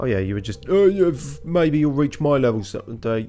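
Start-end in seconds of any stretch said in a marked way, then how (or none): 1.4-3.3 put-on Cockney accent, higher and louder. Voicing a character talking to someone, slipping into a Cockney accent. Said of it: "that's Cockney again".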